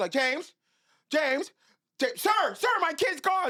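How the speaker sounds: put-on frantic delivery. Telling of hiding as a kid, the speaker imitates their mom searching for them; imitating a frantic mother. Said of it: "Then it got a little bit more frantic".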